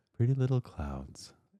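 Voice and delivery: quiet, high-pitched ASMR murmur. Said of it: "our little A S M R voices".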